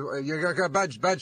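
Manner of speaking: plain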